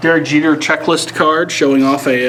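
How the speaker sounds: ordinary delivery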